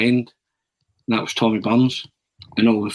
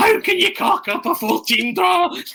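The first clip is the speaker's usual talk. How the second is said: mock comedic rant, high and slow. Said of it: "he goes on this comedic rant".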